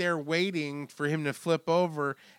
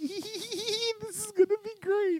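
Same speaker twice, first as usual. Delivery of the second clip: giggly excitement, very high and drawn out; 3 dB quieter than usual. Picturing the killer Cropsey in the canoe: imitating Cropsey giggling excitedly. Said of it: "just giggling".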